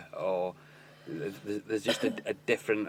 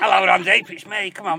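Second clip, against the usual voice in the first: put-on older man voice, higher and louder; 10 semitones higher, 12 dB louder than usual. Joking about a caller phoning in, imitating old Frank from Rotten Store. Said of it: "the old Frank from Rotten Store".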